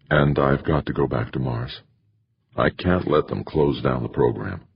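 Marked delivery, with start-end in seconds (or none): none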